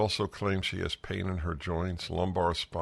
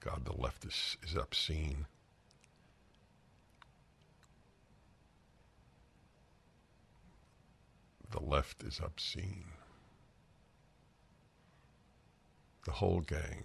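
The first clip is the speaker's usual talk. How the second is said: angry, furious, quieter; 8 dB quieter than usual. Condemning the doctors and the left, angry. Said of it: "I'm so angry".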